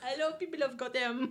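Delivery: put-on French-accented villain voice. Repeating another speaker's villain loudspeaker line: French-sounding Bane voice. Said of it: "He turns very French".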